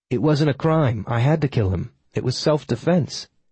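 ordinary delivery

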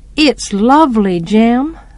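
ordinary delivery

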